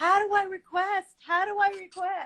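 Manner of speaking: eager, high, drawn-out excited yell. Retelling trying to join a live Insta from the kitchen: imitating own screaming. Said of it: "I'm screaming in the kitchen".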